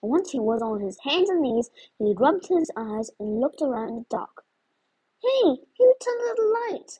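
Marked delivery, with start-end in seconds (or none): 5.2-7.0 whining, very high-pitched voice. Narrator reads a man who fell over his chair, calling out, whiny and high-pitched. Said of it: "He called in a whiny, high-pitched voice".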